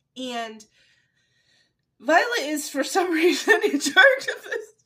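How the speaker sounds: loud, talking while laughing through the words. Summarizing a story's plot for listeners, laughing while talking. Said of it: "I'm sorry, I'm laughing".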